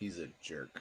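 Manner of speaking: quiet, low, dry delivery. A character comments while petting the horse, deadpan. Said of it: "just deadpan as he starts petting the horse".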